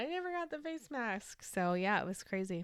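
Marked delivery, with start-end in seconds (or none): 0.0-1.5 high, soft mock complaining tone. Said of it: "I keep telling Amazon".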